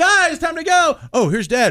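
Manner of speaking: mock, very high, drawn-out, teasing yell. A dad retells his older kids yelling back downstairs, imitating kids yelling mockingly. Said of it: "they'll just yell back downstairs".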